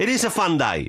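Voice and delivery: forceful angry delivery. Trying to put energy into a line, it comes out forceful, angry-sounding. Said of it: "Now I'm sounding just angry".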